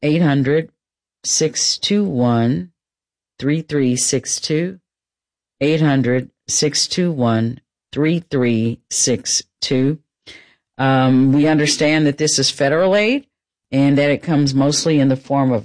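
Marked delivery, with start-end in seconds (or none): 0.0-10.0 slow, unhurried delivery. Giving the FEMA phone number to callers, said slowly. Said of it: "I'm going to say it slowly".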